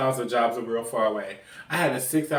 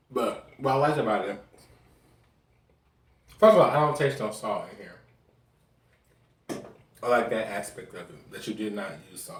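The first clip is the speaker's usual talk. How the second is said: talking with mouth full, lower; 4 semitones lower than usual. Eating a dish someone cooked and commenting on it, talking with mouth full. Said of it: "I'm trying not to talk my mouth full".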